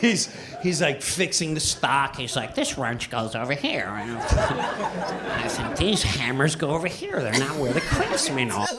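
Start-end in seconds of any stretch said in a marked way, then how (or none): 2.6-8.7 earnest, dead-serious, low voice. Retelling a story about a new coworker, imitating a coworker's voice.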